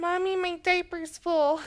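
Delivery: put-on very high, whiny, babyish baby voice. Acting out a man dressed as a baby in a hypothetical: whining like a baby. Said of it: "And he's whining".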